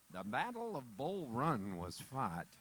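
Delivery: deep nature-documentary narration. Imitating the narrator of a Civil War documentary: Peter Coyote documentary narrator voice. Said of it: "hear Peter Coyote's voice in the Civil War documentary".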